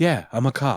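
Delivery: mock-smug, self-satisfied delivery. Retelling how an actor delivered his line, mock-smug. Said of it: "give a little smugginess to it".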